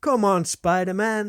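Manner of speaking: put-on high, tiny, impatient little child's voice. Retelling a kid at the cinema during the adverts: imitating a kid's little voice. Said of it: "just heard this little voice".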